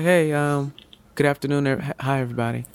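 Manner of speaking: quiet, soft voice. Showing walking in with your head down, speaking softly. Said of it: "With your head down, speaking softly".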